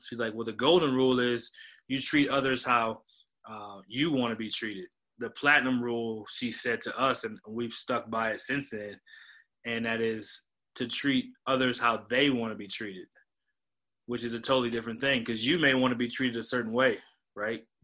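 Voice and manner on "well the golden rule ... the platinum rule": usual speaking voice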